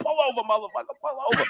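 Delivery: very high-pitched, angry voice. Retelling chasing a driver: imitating own angry cursing. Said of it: "and I'm cursing".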